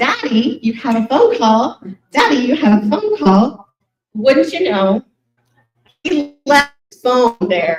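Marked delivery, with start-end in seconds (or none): 0.0-3.7 put-on high little girl's small child voice. Retelling a phone ringtone recorded in a little daughter's voice: imitating her little daughter's voice. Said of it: "My daughter had the coolest voice when she was little".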